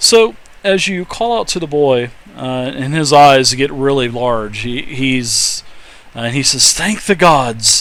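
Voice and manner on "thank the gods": put-on croaked-out boy's voice, rough and strained. Narrator voices a boy answering the player, croaking. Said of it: "he croaks through cracked and bloodied lips".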